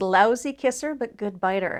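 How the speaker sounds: ordinary talk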